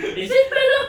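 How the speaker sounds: funny, very high, loud put-on squealing voice. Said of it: "Just say it in your".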